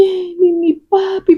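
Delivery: acted, high, tearful weeping. Retelling what a friend said at a wake: imitating someone crying. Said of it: "pero con las grandes lágrimas".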